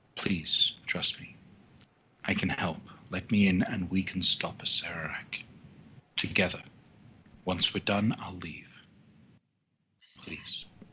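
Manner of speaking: intimate, close-up whispering female voice. Narrator voices a spectral rabbit speaking in the player's ear: whispering female voice. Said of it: "A female voice just whispers in your ear".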